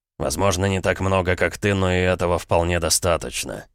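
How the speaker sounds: plain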